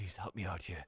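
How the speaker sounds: low, hushed half-whisper, very close. Playing a man being patted on the back who half-whispers in your ear, half-whispering. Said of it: "He just whispers in your ear".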